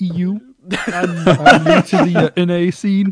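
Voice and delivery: mock European voice, very high and strained.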